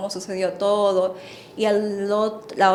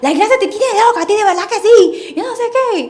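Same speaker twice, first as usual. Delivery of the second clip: furious, very high, very loud and shrill; 13 semitones higher, 11 dB louder than usual. Retelling her mother's reply to the apology: imitating angry scolding. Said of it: "estaba muy enojada".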